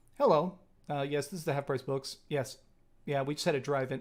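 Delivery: put-on cool, completely unbothered, super calm delivery. Retelling how the employee called after a car crashed into the store: imitating Steve speaking super calmly. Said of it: "he super calmly just".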